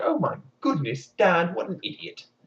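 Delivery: acted tearful sobs breaking up each word. Narrating a fairy tale, a girl locked in a dungeon, crying while talking. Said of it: "crying her head off like".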